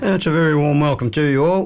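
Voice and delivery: hoarse, unwarmed voice. Radio host welcoming listeners at the start of the Country Muster program, croaky voice. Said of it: "the voice is a bit croaky first up".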